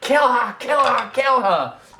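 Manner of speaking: very high, shrill, loud, piercing, repeated shriek. Voicing a woman in a burning coffin: shrieking. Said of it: "the woman is shrieking".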